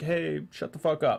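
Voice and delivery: ordinary talk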